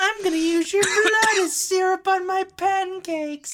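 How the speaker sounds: shrill, pitched very high, pushed very loud. Retelling a cartoon where Mister Happy Face kills a dog: imitating Mister Happy Face. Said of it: "he's saying this as he's just repeatedly stabbing".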